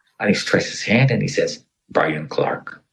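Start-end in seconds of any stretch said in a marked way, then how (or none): 1.9-2.7 stiff, breathy, robot-like voice. Retelling a rescuer introducing himself, like a robot. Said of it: "like a robot".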